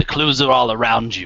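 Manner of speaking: cryptic, portentous, oracle-like pronouncement voice. A construct answers a man's request for a clue, booming voice. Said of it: "again the booming voice".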